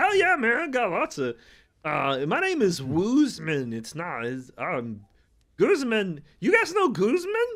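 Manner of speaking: very high, very loud, swooping, drawn-out booming voice. Voicing the character Guzman, who offers drinks: Guzman character voice. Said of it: "and Guzman's like".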